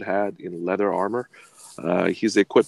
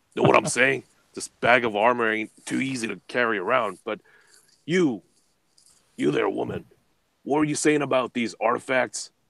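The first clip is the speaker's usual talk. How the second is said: sour, grudging, surly, displeased tone; 4 semitones higher than usual. A game master voicing a character addressing the players, said with a scowl. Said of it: "says with a scowl".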